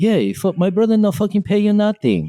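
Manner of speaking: very high-pitched voice. Prank calling his restaurant, posing as the boss: Jackson Lee impression. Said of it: "imitate him around my friends".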